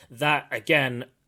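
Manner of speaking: ordinary talk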